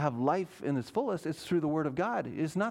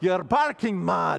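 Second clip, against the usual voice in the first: loud, terrible put-on Scottish accent; 6 dB louder than usual. Retrying a man's quote about sermons, in an attempted Scottish accent. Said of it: "Let me try it".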